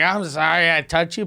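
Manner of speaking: mock drunken man's speech. Retelling a drunk man coming back to apologize: imitating a drunk man. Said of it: "but he was so drunk".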